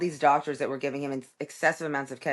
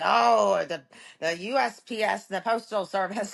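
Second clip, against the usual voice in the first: put-on old Irish accent, higher; 5 semitones higher than usual. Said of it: "I sound like an old Irish person".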